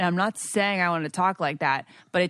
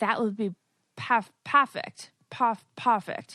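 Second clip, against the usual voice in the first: attempted, put-on English accent; 5 semitones higher than usual. Talking about Bridgerton and trying to talk like a character, in an attempted English accent. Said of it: "the English accent is funny".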